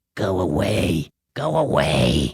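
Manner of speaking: very slow, low, drawn-out hissing voice. Narrator quotes what the thing in the tunnel said to Ernest, hissing voice. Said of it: "in a hissing voice".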